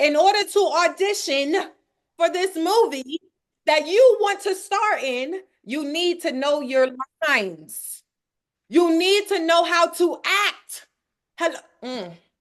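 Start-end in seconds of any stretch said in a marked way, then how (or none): 0.0-10.9 loud, fired-up, shouted yelling. Speaking to the audience, yelling. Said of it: "I'm I'm yelling again".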